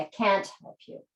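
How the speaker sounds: heavy emphasis on the word can't. Showing how to deny an offer of help: stress on can't. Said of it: "So I'm stressing the negative more".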